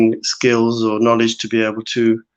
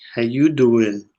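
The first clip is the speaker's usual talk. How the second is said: fake, put-on American accent. Replying to a listener's greeting on a Monday morning, fake American accent. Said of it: "Trying to do my American accent".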